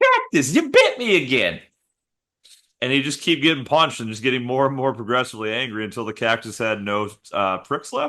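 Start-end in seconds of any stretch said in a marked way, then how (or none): 0.0-1.6 very high voice swooping around, with a lisp. Imagining a boxer punching a cactus: Mike Tyson impression. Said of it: "I can't do a very good Mike Tyson".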